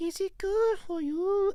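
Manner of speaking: put-on very high, slow little old lady voice. Practicing voiceover voices while another person comments, in a Mrs. Doubtfire voice. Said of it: "that sound like Miss Doubtfire".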